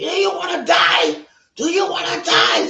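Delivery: high-pitched, loud shouting.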